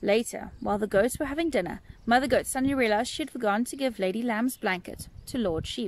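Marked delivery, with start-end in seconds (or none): none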